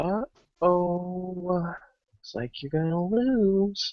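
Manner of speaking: high, hushed half-whisper with drawn-out oh. Acting out a game scene, the character leans in to his ear: half-whispering. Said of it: "I'm going to whisper in his ear".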